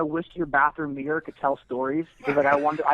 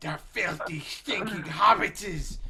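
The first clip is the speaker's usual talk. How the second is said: put-on creature voice, quieter; 2 semitones higher, 6 dB quieter than usual. Answering a request for the group's best Smeagol impression: Smeagol impression. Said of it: "can I hear you guys' best, uh, Smeagol impression".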